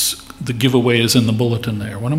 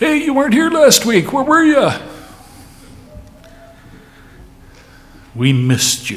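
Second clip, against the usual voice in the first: mock very high, big sing-song voice, swooping; 4 dB louder than usual. Retelling Don Carpenter greeting someone in the hallway, in Don Carpenter's big voice. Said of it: "big voice saying to them".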